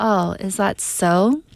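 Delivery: very slow, drawn-out, doubting sarcastic disbelief. Showing how to answer an excuse you don't believe: disbelieving, sarcastic tone. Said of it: "you just don't believe their excuse".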